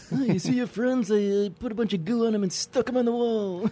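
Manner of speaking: cartoon mobster voice. Improvising a scene riffing on Aliens, in a Simpsons mafia character voice. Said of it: "You sounded like a Simpsons mafia character there".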